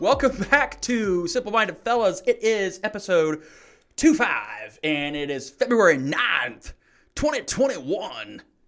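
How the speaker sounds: announcer-style voice. Opening an episode of the simple minded fellas podcast, in a radio host voice. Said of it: "It's like an actual radio host".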